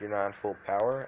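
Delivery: ordinary delivery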